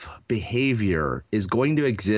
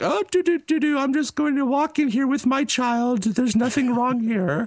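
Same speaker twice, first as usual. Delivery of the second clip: high, fake innocent, playing-dumb voice. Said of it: "pretending like they didn't know".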